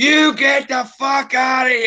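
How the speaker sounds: put-on shrill, very high screaming old lady voice. Retelling how an old lady answered an offer of help: imitating her screaming. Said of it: "and starts screaming at me".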